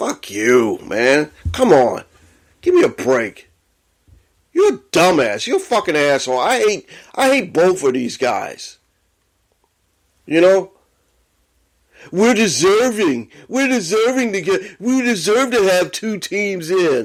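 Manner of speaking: furious, worked-up, hyped-up angry rant. Reacting to a commissioner's remark, really angry and hyped up. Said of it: "I'm getting really hyped up and really angry".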